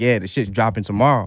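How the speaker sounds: normal talking voice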